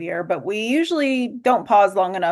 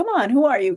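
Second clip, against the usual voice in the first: play-acted daring, challenging, pitched-up tone; 5 semitones higher than usual. Retelling what her inner voice said to her: imitating a challenging tone. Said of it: "challenging kind of way".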